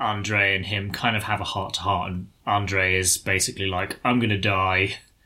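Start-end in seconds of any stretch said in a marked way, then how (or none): 4.0-5.0 put-on stoic, resigned, depressed tone full of dread. Retelling a heart-to-heart the night before a battle: acting out stoic, resigned dread. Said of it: "stoic, like, resigned, sort of depressed".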